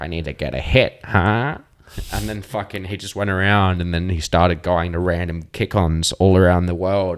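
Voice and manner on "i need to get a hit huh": put-on villain voice and accent. Retelling what a man said he needed, in a villain accent. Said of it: "like a villain accent".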